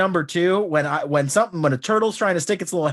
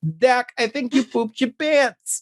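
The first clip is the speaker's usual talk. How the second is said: put-on high, small toddler voice; 6 semitones higher than usual. Retelling what a little girl said as the speaker turned to leave: little three-year-old voice. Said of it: "in her little three year old voice".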